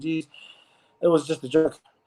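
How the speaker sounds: plain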